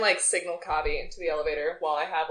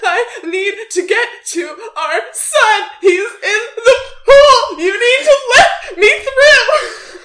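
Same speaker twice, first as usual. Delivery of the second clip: very high, loud, frantic put-on tearful sobbing; 16 dB louder than usual. Retelling a scene with a staff member after a spill, fake crying and frantic plea. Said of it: "And start crying".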